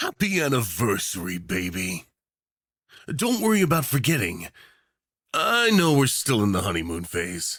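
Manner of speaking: sickly sweet, teasing, flirtatious voice that swoops. A yandere dictator turns the war photographer's head up to him; sickeningly sweet, flirty. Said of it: "Tags:[M4A][Enemies to Lovers?][Extreme Yandere Dictator Speaker][War Photographer Listener][VERY Yandere][Delusional][Flirting][Teasing][Dinner Date?][Unwilling]to[Begrudgingly Willing][VERY Spicy][Do".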